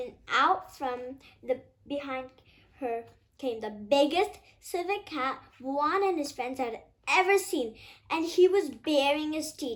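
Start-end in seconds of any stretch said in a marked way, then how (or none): none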